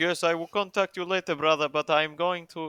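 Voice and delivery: very loud fake put-on Russian accent. Imitating a former contact who stopped answering; put-on accent that sounds Russian. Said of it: "This sounds more Russian".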